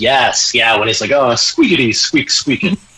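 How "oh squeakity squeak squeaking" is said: put-on cartoon squirrel voice. Answering a question about The Emperor's New Groove, imitating Kronk speaking squirrel. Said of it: "That's a great one".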